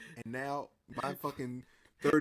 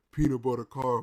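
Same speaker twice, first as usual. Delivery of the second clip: large, big-sounding, deep put-on voice. Retelling a line from a wrestling show segment: imitating a big deep voice. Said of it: "this big, tall, deep voice".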